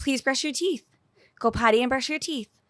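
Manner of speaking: very nice, polite voice. Retelling asking a child to brush her teeth: imitating own very nice voice. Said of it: "told you in a very nice voice".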